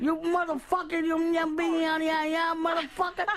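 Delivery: pretend shouting. Yelling at another speaker after being asked to yell in Spanish: mock yelling. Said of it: "yell at him in Spanish. Yell at him".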